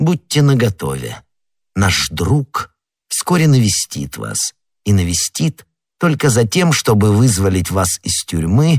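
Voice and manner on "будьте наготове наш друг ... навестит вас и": usual speaking voice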